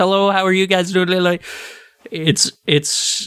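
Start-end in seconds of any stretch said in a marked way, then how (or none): 0.0-1.1 very fast, compressed auctioneer-style patter. Reviewing a game, mimicking how its voice acting sounds, auctioneer-like voice acting. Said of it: "all the voice acting is delivered like this".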